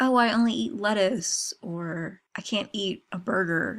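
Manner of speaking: cute, little put-on American accent. Quoting a man who put on an american accent while telling a story. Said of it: "And he did his American accent".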